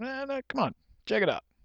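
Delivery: high, soft, coaxing salesman voice. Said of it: "but the salesman says".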